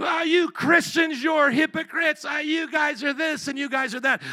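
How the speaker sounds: loud, drawn-out, high scream.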